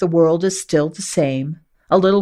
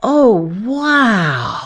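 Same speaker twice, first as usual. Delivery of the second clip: stoned-sounding voice, higher pitch; 5 semitones higher than usual. Reading a story aloud, a character marvels: tripped-out voice. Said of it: "he says in a tripped-out voice".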